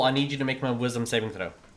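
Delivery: ordinary delivery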